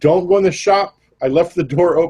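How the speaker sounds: called out high, pitch running up. Voicing a character running up from the back to warn others: yelling. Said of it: "yelling that".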